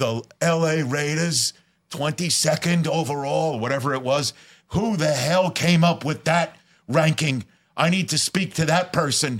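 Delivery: put-on Brooklyn accent. Retelling a man with a walker confronting the speaker: thick brooklyn accent. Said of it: "thick Brooklyn accent".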